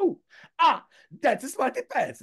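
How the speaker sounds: very loud, high-pitched voice. Performing a requested Artie's Smarty Pants line: loud Artie voice. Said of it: "to do Artie's voice, you have to do it very loud".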